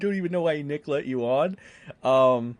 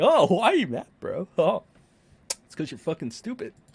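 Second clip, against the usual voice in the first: mock offhand, unbothered, swooping sing-song tone; 4 semitones higher than usual. Retelling a debater's reply while imitating someone acting unfazed. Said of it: "pretend like I'm unfazed".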